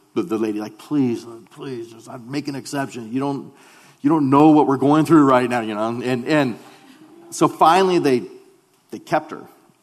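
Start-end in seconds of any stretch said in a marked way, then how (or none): 0.8-5.6 urgent, earnest, begging, pleading voice. Retelling begging the hospital lady to keep his wife in labor: imitating pleading. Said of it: "we're pleading with her".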